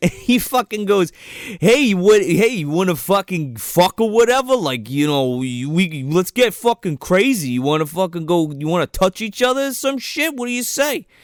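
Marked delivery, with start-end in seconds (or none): 1.6-11.0 typical frat guy, party-bro way of talking. Retelling a scene at a frat house, imitating a frat guy's way of talking. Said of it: "This guy talks just like this".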